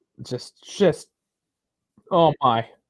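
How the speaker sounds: slow, frustrated, exasperated stammering sputter. Watching the match run past full time with no whistle: getting angry. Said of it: "I'm getting angry now".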